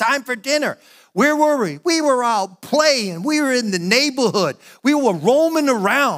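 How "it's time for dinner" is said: put-on screaming, calling out. Retelling how mom called the kids from far away: imitating mom screaming. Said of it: "She would just be screaming".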